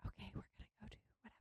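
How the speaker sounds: near-silent, hushed whisper. Imitating a preschool teacher who whispered when upset: imitating a teacher whispering. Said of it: "But it was just a whisper".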